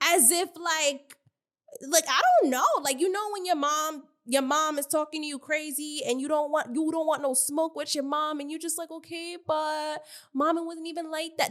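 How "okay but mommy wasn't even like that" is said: mock meek, small, scared, polite, placating voice. Imitating how Anna answered Bad Dolly: imitating Anna sounding quiet and scared. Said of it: "That's how she sounded".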